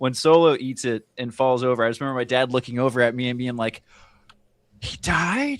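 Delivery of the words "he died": loud, squeaky, high-pitched stage whisper. Retelling a dad's reaction during a movie: imitating a loud high whisper. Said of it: "whispering, but he's whispering really loud".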